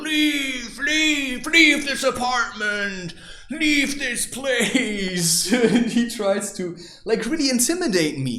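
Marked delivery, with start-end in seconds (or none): 0.0-5.5 mock shouting, higher pitch, much slower. Recounting a man who tried to intimidate him like a child, retelling a shout. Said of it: "he starts shouting".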